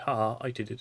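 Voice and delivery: plain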